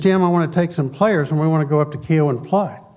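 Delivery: ordinary delivery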